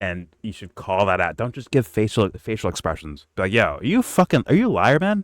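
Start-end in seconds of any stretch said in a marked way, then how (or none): 3.5-5.2 harsh, mean, confrontational, swooping delivery. Showing how to call out someone lying in a debate, mean and confrontational. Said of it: "as mean as I say it".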